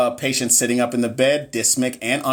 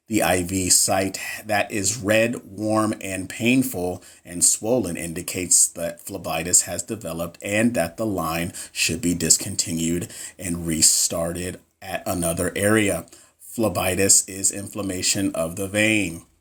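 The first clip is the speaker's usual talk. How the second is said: fake flat monotone, lower and quieter; 6 semitones lower, 3 dB quieter than usual. Jokingly reading a quiz answer explanation aloud, in a fake monotone. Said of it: "I'm about to read this answer monotone".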